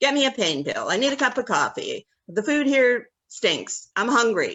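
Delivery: put-on loud, bossy, nagging rapid barrage. Retelling how she would boss the speaker around day after day, imitating a bossy tone. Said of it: "the annoyment was like bossing me around".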